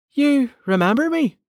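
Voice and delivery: very high, startled, surprised disbelief. Yacht answers a man's voice echoing in a tunnel: surprised. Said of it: "sounding surprised".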